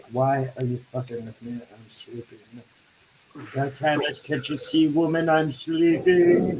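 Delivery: drowsy, sleepy, just-woken cat voice. Retelling what the cats say when woken up: voicing a sleepy cat. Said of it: "they're like".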